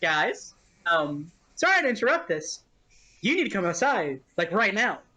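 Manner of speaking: deranged, unhinged, manic, urgent voice. In character, calling the group outside with a surprise, unhinged and manic. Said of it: "that did sound deranged and manic".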